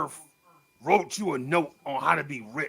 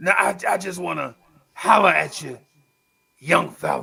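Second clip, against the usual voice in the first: loud, creaky, rough preacher voice; 5 dB louder than usual. Retelling what the preacher asked him one time: imitating the preacher. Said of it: "He like".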